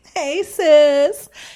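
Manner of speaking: play-acted very high, very loud, friendly cheery voice. Retelling greeting a neighbor from the car: retelling a big smiling greeting. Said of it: "I'm smiling big".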